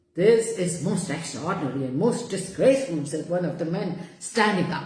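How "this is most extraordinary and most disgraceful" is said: ordinary delivery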